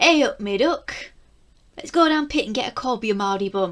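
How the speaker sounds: accent from Nottingham. Talking about British accents on screen, the speaker dips into a Nottingham accent. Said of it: "Sometimes I do dip into my Nottingham accent".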